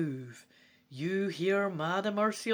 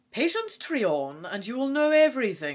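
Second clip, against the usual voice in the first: raised voice, cutting in sharply; 4 semitones higher, 5 dB louder than usual. A tiny dragon in a ring answers the prince's questions; interrupting. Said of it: "and I am [name], guardian of the magic portals of [name] before I was imprisoned inside this ring. / You look down at your ring to see the tiny dragon moving its head and looking up at you. / a small".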